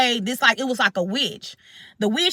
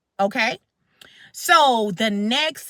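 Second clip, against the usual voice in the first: plain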